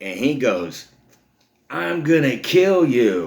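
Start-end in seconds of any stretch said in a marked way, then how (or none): 1.7-3.3 put-on high, loud, slow furious toddler voice. Retelling a kid who got slapped hard, imitating an angry kid. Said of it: "this kid got pissed off".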